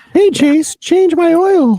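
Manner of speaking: put-on sweet, very high, cutesy girly squeak. Joking about putting on a wig, the speaker switches to a put-on cute voice. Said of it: "I got to talk in my cute voice".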